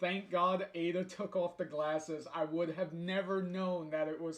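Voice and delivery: normal talking voice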